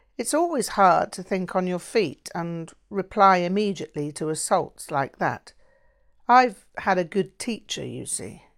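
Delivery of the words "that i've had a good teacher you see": plain reading voice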